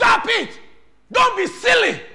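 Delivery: very high, loud, piercing scream. Showing how a parent screams at a child at home. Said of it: "You scream".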